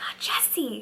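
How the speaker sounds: stunned, soft, slow, breathy whisper.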